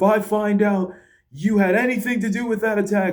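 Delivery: high-pitched yell. Retelling how an official yelled at a wrestler: imitating someone yelling. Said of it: "he's yelling at Drew".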